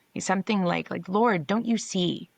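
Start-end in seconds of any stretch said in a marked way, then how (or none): 1.1-2.2 put-on exasperation, higher pitch. Retelling a woman in a story pleading with the lord, mock-exasperated plea. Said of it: "I can hear the exasperation in her voice".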